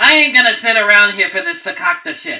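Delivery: very loud, shrill, rushed goblin-like scream. Voicing a goblin boss in a fight: goblin boss screaming. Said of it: "the goblin boss screams".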